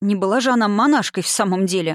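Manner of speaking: ordinary delivery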